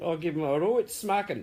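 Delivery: poor put-on Scottish accent. Speaker telling viewers what they will do to Tom, in a terrible Scottish accent. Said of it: "It's a terrible Scottish accent".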